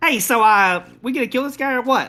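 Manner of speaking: high-pitched, loud casual tone. Voicing Melisius speaking in a player's head: Melisius voice. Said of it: "you hear in your head the voice of Melisius".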